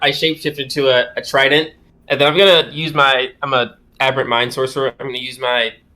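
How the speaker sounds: normal talking voice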